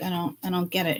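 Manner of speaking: ordinary talk, nothing marked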